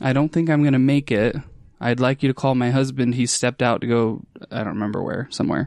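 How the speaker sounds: ordinary talk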